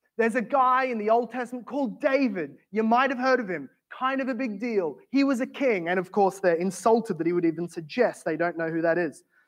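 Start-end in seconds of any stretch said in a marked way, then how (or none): none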